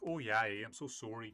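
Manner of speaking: thick Canadian accent. Explaining the Newfoundland accent, demonstrate a thick stereotypical Canadian accent. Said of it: "super thick Canadian accent, like the the stereotypical one".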